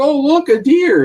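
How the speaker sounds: very high, loud, noisy, drawn-out group chatter. Retelling passing pheasant hunters spotting a deer: imitating loud talking. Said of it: "they're talking loud and everything".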